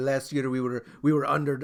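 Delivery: bad, awful put-on Italian accent. Retelling what an Italian goalkeeper said in an interview: awful Italian accent. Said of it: "that's an awful accent".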